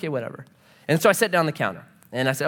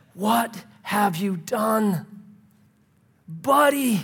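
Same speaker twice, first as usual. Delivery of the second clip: put-on heartbroken, broken-hearted voice; 4 semitones higher than usual. Explaining a bible verse, the speaker voices god as a heartbroken dad. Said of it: "the voice of a heartbroken dad".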